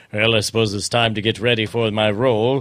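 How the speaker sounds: low, Shakespearean stage accent throughout. Imagining an actor getting ready for a role: Peter Dinklage Shakespearean accent. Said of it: "Peter Dinklage with his amazing Shakespearean accent".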